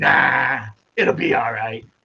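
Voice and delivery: slow, drawled attempt at a British or Scottish accent. Imitating a reviewer dismissing a warning: attempted Critical Drinker voice. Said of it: "the British or Scottish accent so I could sound like a Critical Drinker".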